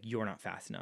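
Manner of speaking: dry, expressionless, soft, flat, quiet deadpan. Retelling a superhero scene, Batman answers Barry, in a mock-deadpan Batman voice.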